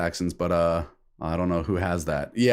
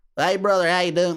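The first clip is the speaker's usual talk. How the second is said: very high American bumpkin voice; 10 semitones higher than usual. Comparing hick Americans with hick Canadians, doing a hick American accent. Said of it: "like the hick Americans like hey brother".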